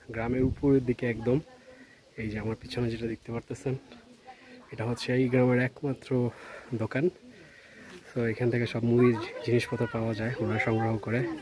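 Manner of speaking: soft, hushed voice. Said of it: "আমি অনেক আস্তে কথা বলতেছি".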